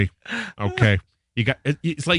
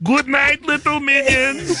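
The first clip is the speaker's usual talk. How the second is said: very high, pitched-up cartoon-character voice. Showing the voice done at bedtime for the children: Gru voice. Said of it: "I do this voice for my children".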